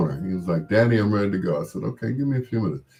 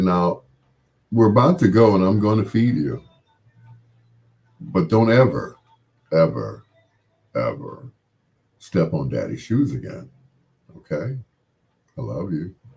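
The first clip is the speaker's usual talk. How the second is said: voice dropped as low as possible. Retelling what he told the boy after picking him up by the collar, in his deepest voice. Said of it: "deepest voice that I had".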